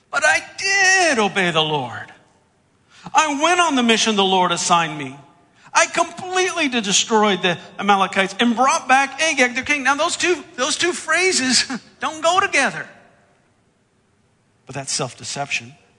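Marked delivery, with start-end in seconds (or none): 0.1-9.8 high, loud whiny voice. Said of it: "you can just kinda hear a whiny voice".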